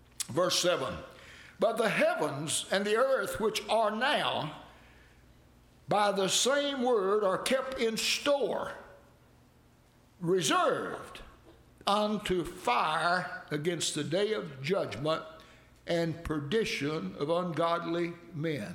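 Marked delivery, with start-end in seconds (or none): 1.6-18.8 slow, deliberate, unhurried reading aloud, word by word. Reading one Bible verse, 2 Peter chapter 3 verse 7, to listeners, reading slowly. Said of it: "I read that slow".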